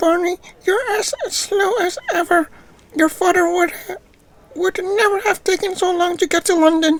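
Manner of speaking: very high-pitched, wicked, evil witch voice. Voicing Grandmom greeting Barney, in an evil witchy voice. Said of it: "some evil witchy sound".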